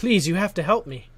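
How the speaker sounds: screamed, high and loud. Voicing a boy with tears in his eyes running up to the players: screaming plea. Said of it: "he screams".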